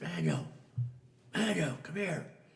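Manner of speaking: whisper that comes out as hollering.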